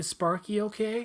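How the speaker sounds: put-on high small child's voice. Retelling a movie phone call in which the caller asks about the dog, little kid voice. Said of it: "he's got the little kid voice".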